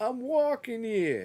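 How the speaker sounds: very high-pitched, put-on New York accent. Retelling a coworker's teasing, quoting him while imitating a new york accent. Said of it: "The accent?".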